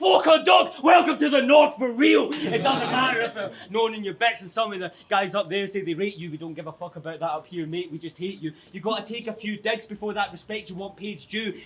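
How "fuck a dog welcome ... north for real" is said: high, loud shout. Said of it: "the Manny boys will shout".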